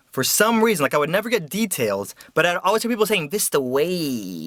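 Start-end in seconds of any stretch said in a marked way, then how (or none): 3.3-4.5 dreamy, blissed-out, relaxed, "way" drawn out. Imitating how people always say a street name: mock-blissful, like getting a massage. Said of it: "they always say it like that, like they're getting a massage while they say like Vista Way".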